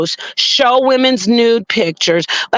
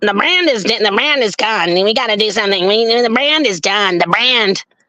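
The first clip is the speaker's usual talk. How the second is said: nasal, mocking put-on voice through the nose. Imitating a man who later showed up on a panel, mocking nasal voice. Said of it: "let me talk through my nose".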